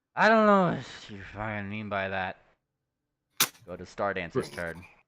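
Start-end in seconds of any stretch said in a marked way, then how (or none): 0.2-2.4 put-on booming, very loud drunken outburst. In a tabletop game, the speaker voices a character answering a player, in a drunken voice. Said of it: "in a very somewhat drunken voice".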